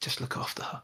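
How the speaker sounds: soft, barely voiced, pleading whisper. A man let up from arrest stumbles into Aurora and speaks to you: whispered. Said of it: "whispers to you".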